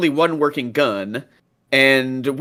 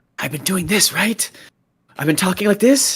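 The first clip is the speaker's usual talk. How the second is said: voiced stage whisper; 4 semitones higher than usual. A tabletop player speaking as her character casting the message cantrip, whispering. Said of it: "She whispers and she casts the message cantrip".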